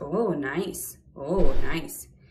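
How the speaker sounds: very slow, loud, drawn-out sarcastic delivery. Replying to accusations of harassing men, sarcastic. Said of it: "It's that sarcasm now that you get from me".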